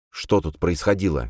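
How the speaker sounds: ordinary delivery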